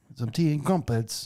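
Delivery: really bad, fake British accent. Imitating an english actor talking about himself: bad british accent. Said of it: "the worst British accent ever".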